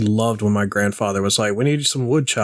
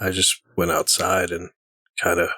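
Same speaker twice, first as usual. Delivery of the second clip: sounding depressed; 3 semitones lower than usual. Telling the others about a morning workout: sounding depressed. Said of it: "love how you sound all depressed".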